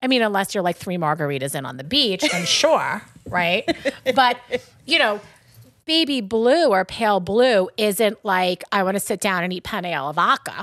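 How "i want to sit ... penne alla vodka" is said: Long Island accent. Deliberately saying a phrase in their own Long Island accent. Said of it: "I'm saying it like that on purpose. That's my Long Island accent".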